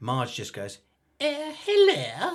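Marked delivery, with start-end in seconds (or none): 1.2-2.4 bad, very high royal-sounding voice. Retelling a phone call, imitating a bad impression of the Queen. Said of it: "like the Queen".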